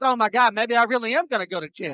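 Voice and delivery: ordinary talk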